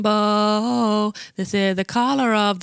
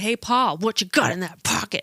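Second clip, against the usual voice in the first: angry line reading. Showing how they'd deliver a line in an improv circle: angry delivery. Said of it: "So I do the angry".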